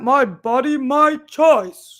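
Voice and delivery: very loud, booming, high-pitched jolly-style voice. Trying out slogans one by one, saying this one in a Santa voice. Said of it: "Santa can believe that".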